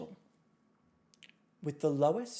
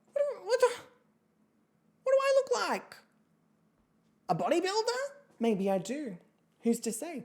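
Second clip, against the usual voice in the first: exasperated, much higher, thrown back way up high. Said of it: "I'm like".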